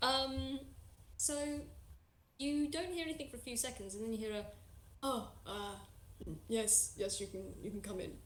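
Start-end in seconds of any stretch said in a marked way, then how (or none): 5.0-8.1 unsure, stumbling, halting, hesitant delivery. Voicing someone answering a knock at the door: hesitant reply. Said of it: "the wording seems very hesitant".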